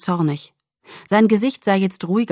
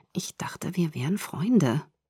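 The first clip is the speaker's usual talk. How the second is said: through clenched, gritted teeth, quieter; 8 dB quieter than usual. A narrator replies to a friend who refuses to answer; through clenched teeth. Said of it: "sagte ich mit zusammengebissenen Zähnen".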